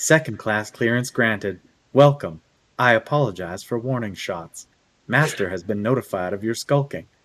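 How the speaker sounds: sexy, sultry, seductive, come-hither reading voice. Asked to read the level-two entrance text aloud, in a sexy voice. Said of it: "Read in your best sexy voice".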